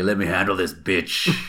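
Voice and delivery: put-on horror slasher villain voice. Retelling a movie scene where a stoner speaks as Freddy: Freddy voice. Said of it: "with Freddy's voice".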